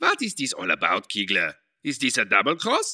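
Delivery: exaggerated German accent. A character questions Kiegler, in a stereotyped German accent. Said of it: "that is one stereotyped German accent".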